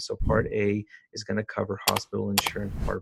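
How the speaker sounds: lifeless, dull, flat monotone drone. Showing how a dull phone sales pitch sounds, dull and monotone. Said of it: "dull and monotone, and if you're basically just talking like this".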